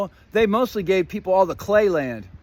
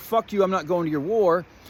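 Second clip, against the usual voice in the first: plain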